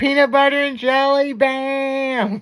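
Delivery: very high, slow voice, "bam" stretched long. Retelling an outtake from Trailer Park Boys: imitating Ricky from Trailer Park Boys. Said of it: "He's like".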